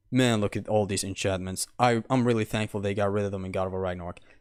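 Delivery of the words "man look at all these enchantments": put-on slightly lower, a teeny bit deeper voice. Showing how a remark in a game review would sound, slightly lower voice. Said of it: "in a lower voice".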